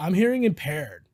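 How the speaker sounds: put-on California Valley girl accent. Retelling what a drunk man said to them: put-on valley girl voice. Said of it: "for some reason I'm making it Valley".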